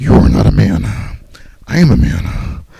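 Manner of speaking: low, slow, creaky, rough, drawn-out delivery. Retelling how a wrestler talked to Kane: imitating Ryback talking like Krang. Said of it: "He damn near talks like Krang".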